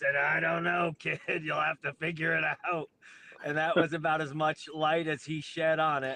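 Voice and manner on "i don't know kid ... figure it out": gruff, rough delivery. You retell a phone call about your flight itinerary and give the answer, imitating Harley's gruff voice. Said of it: "in his gruffled voice".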